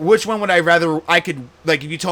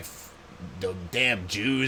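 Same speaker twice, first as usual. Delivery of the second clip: put-on acted-out old man voice, lower and quieter; 8 semitones lower, 12 dB quieter than usual. Acting out what a sweet grandpa suddenly says: imitating a grandpa. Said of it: "but then he's like".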